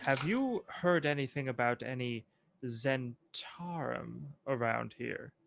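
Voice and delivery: very quiet, low, discreet, confidential murmur. A character asks the shopkeep a question about the area, speaking very quietly. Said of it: "say very quietly to the shopkeep".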